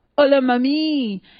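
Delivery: loud flirty sweet-talking call with mami drawn out.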